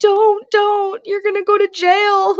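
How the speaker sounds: tearful, high, crying, pleading voice. Retelling Emily pulling the speaker back into the truck, imitating Emily crying. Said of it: "Emily is crying".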